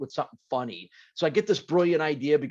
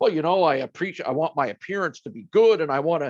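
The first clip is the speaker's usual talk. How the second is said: serious, earnest, raised voice, a bit loud; 2 semitones higher, 5 dB louder than usual. Retelling an interview answer, imitating Jimmy Johnson's serious answer. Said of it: "gives this real, like, serious".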